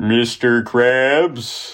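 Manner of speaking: small cartoon villain voice. Trading cartoon voice impressions with the others, doing a Plankton voice. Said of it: "That's a good Plankton".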